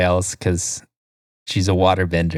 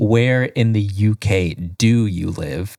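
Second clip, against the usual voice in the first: usual speaking voice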